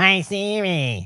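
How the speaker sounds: mock nasal voice, as if nose held. Imitating mum talking to her phone in the car: imitating mum, nasal voice. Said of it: "I guess I hold my nose".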